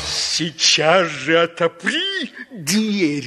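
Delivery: beastly, growled, wolf-like growling voice. Reading a children's tale aloud, voicing the wolf at the pig's door, growling. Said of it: "прорычал волк".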